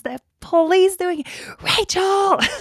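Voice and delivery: put-on scream, very high. Speaker mimics their mom yelling from a bedroom window about police: imitating mom screaming. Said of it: "my mom ... just screaming like".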